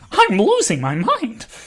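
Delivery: shrill, very high, raving manic villain voice. Rambling to a chat with no one in it, try again at your Joker impression. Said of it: "That was more accurate".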